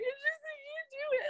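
mock very high, rushed speech through tears. Speaker re-enacting their reply to his offer to take care of everything, re-enacting crying speech. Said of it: "And I'm crying".

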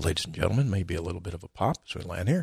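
even-keeled, calm, soft, reassuring pilot intercom voice. Imitating the pilot landing the plane in the Hudson: Sully's pilot announcement. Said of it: "the guy that's landing the plane in the Hudson River going like".

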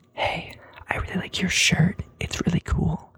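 close, breathy whisper right into the ear. Retelling a girl coming up close in a crowd: imitating a whisper. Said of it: "whispering in my ear".

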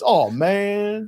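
drawn-out lament, "man" stretched. Talking through pitching stats, doing a Blake Snell voice. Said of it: "it's my Blake Snell voice".

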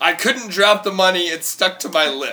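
put-on loud, high hollered yell. Retelling a friend running out of a store with beer: retelling a friend's yell. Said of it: "and he's yelling".

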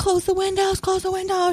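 very high-pitched, frantic bawling. Retelling a sister's frantic call, imitating frantic bawling. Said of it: "frantically bawling".

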